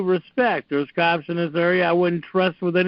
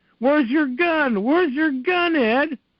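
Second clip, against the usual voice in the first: high, insistent, barking yell; 8 semitones higher than usual. Retelling a cop demanding to know where the gun is: imitating a cop yelling. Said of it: "he's yelling at me going".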